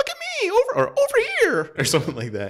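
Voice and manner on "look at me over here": fairy voice, much higher, louder, slower. Recalling old Nintendo 64 game sounds with friends, Navi voice, loud and annoying. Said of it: "Really loud and annoying, high pitched".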